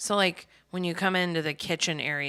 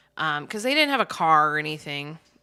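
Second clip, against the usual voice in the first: usual speaking voice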